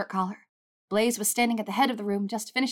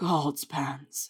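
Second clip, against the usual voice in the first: groaning, much lower; 6 semitones lower than usual. He answers Pansy, groaning. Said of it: "he groaned".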